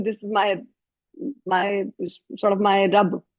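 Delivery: ordinary delivery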